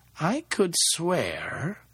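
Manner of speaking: voice dying away unfinished, trailing off. A man walking with a woman in the mist stops short, his voice trailing off. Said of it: "His voice trailed off".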